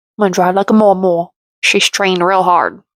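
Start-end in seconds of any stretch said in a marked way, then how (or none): 0.2-1.3 put-on, imitated Cajun accent. Quoting a woman's line again, this time in a Cajun accent. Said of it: "put a Cajun accent on that mama".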